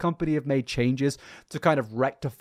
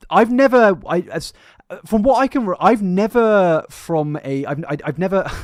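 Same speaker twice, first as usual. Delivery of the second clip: raised, pitched-up stuttering with stumbling false starts; 6 semitones higher, 7 dB louder than usual. Asked about the coupon thing, a speaker stumbles through an answer, stuttering. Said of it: "I feel like I'm stuttering right now".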